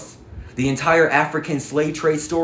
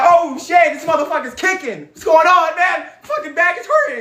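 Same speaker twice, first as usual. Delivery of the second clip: stunned, beaten-sounding voice, pitched up; 6 dB louder than usual. Acting out the imagined man after being kicked: imitating the opponent being kicked. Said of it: "And he's like".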